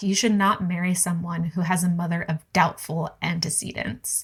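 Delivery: ordinary talk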